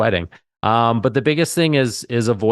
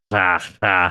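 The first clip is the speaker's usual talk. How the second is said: loud put-on panting, lower pitch; 4 semitones lower than usual. Describing uncontrollable panting on the phone, in a panting Schwarzenegger impression. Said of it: "That's my Schwarzenegger uh, impersonation".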